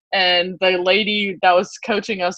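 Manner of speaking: usual speaking voice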